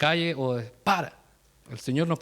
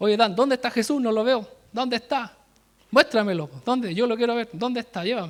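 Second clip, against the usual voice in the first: mock shouting at full volume, high-pitched; 7 semitones higher than usual. Retelling how a classmate taunted him about Jesus: imitating someone yelling. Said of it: "él empezó a gritar".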